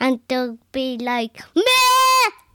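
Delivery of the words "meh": very high, loud lamb bleat. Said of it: "that blew my ears up".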